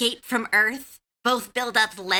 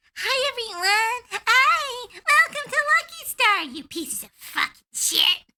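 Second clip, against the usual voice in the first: put-on cute but toxic announcer voice, higher; 12 semitones higher than usual. Acting out a cute but toxic anime announcer greeting everyone: imitating a cute but toxic announcer. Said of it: "She was so cute".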